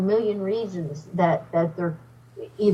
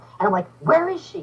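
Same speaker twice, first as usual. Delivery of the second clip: ordinary talk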